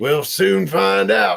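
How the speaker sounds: put-on rough, creaky old man voice. Describing a Red Dead scene, doing the Uncle character's line: Uncle impression from Red Dead. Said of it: "that's my uncle impression".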